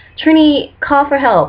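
mock high, screamed-out cry. Retelling eyes burning in the shower, imitating own screaming. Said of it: "I was just screaming".

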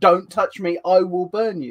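shouting. Describing a scene where a cop reaches for him, imitating Superboy shouting. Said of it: "Superboy has to shout again".

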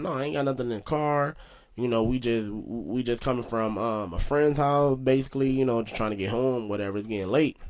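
ordinary talk

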